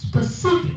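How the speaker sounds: stress on second syllable ci in specific. Showing a class how to say the word: stress on ci in specific. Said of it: "the stress is on the second syllable".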